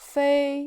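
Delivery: steady, unmoving high level first tone on 飞. Teaching 飞, meaning fly, in the first tone: 飞 high and level. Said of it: "And it's the first tone".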